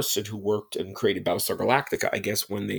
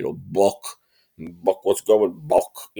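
put-on Bronx accent, slower; 2 semitones lower than usual. Describing a character he voiced alongside, quoting Tweaky's Bronx guy voice. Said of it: "sounded like a guy from the Bronx".

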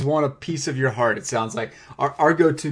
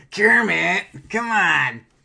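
higher-pitched put-on puppet voice; 8 semitones higher, 4 dB louder than usual. Asked for Miss Piggy, answering in a Gonzo voice. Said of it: "That sounded like Gonzo".

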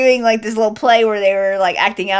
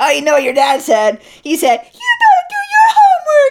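put-on very high, loud, swooping, squeaky girl voice; 5 dB louder than usual. Speaker pretends to talk like the co-host, as done with Nona, mock squeaky girl voice. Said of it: "talking in like a squeaky girl voice".

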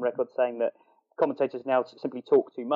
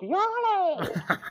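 high, ecstatic commentator cry. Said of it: "and it was just".

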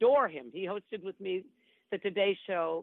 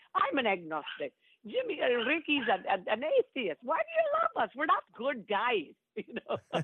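put-on high, slow Scottish brogue; 7 semitones higher than usual. Quoting a man asking Kathie why she loves him, in a Scottish brogue. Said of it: "with this wonderful Scottish brogue".

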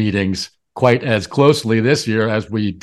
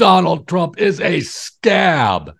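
mock raised bellowing, word scab drawn out; 7 semitones higher than usual. Recounting a politician's speech, retelling how he bellowed. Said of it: "he bellowed".

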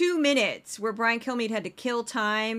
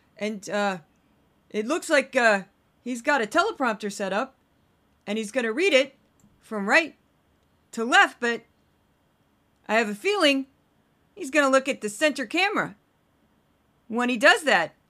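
rambling, halting speech full of uhs; 2 semitones higher, 4 dB louder than usual. Imitating a TV host filling two minutes of dead air: Brian Kilmeade impression. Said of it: "my best Brian Kilmeade impression".

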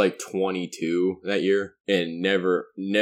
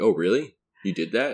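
put-on earnest, serious voice. Imitating how Barnes would answer a sarcastic remark: imitating Barnes taking it seriously. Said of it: "and he'd just take it seriously".

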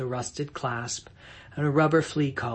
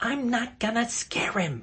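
very high, swooping hissed voice; 11 semitones higher than usual. On the porch, Maureen answers Tom's hissed warning about the cat, hissed back. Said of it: "Maureen hissed back".

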